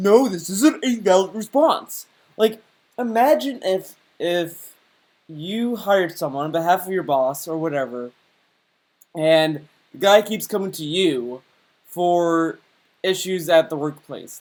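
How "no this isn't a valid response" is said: put-on fuming tantrum, angry yelling, full hissy fit. Retelling how someone yelled at them over an answer: imitating someone yelling. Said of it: "He is yelling at them like".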